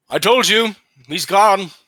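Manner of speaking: sneering, snide, high-pitched yell across a distance. Voicing a figure the players hear yelling from far off, in a snide yelling voice. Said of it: "You hear a snide voice yelling".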